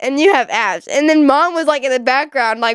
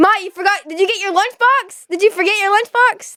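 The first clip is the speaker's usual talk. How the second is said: shouting, pitched higher; 6 semitones higher than usual. Retelling a dad calling out about a lunchbox: imitating dad yelling. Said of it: "you were yelling at me".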